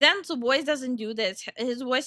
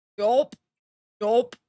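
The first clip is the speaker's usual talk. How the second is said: voice pushed to lowest possible pitch. Showing how low the voice goes: deepest possible voice. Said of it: "that's like the deepest my voice can go".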